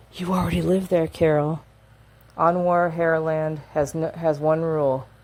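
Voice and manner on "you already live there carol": put-on whisper. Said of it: "and he's whispering".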